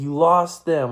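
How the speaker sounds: mad, angry, accusing tone. Retelling a dream where the dad snapped at the speaker: imitating an angry dad. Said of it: "all mad".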